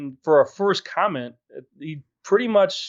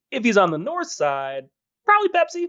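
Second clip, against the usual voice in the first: high, swooping, improvised put-on short-man voice; 6 semitones higher than usual. Reading out a commenter's joke in his imagined voice: imitating Andrew's voice. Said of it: "Why'd you say it like that?".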